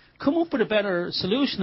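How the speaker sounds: ordinary talk, nothing marked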